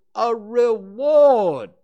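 booming, very loud, drawn-out delivery. An owl repeats his point to a friend, very loudly. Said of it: "Owl said very loudly".

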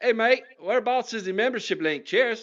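terrible fake Australian accent, pitched very high. Reading out a question from Matty Butcher, a podcast host uses a terrible Australian accent. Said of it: "I'm going to do this in my terrible Australian accent".

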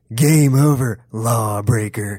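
low, raspy, from back of throat, every word enunciated. Quoting a cartoon vigilante's line: low raspy Casey Jones voice. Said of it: "he enunciates everything, and he, it's just a low tone".

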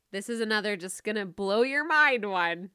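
tongue-in-cheek, sarcastic, ironic, teasing tone. Podcaster introduces a last piece of advice to listeners, sarcastic. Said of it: "That's sarcasm".

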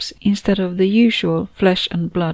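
ordinary delivery, nothing marked

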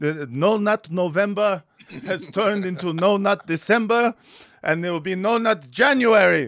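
put-on Yiddish-flavored voice. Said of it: "making them sound y-, Yiddish".

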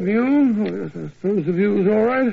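plain reading voice

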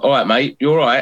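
normal talking voice

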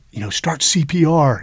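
high, loud yell.

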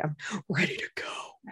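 soft whisper under the breath.

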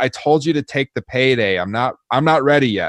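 shouting. Retelling a wrestling match, quoting a wrestler's taunt: imitating Roman Reigns yelling. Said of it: "He yells".

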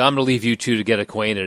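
ordinary talk

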